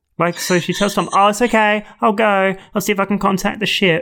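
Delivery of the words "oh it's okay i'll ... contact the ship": loud, carrying voice, for anyone to hear. Recapping an episode, retelling what B'Elanna tells Tom; B'Elanna saying it loudly. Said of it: "But she says that so loud".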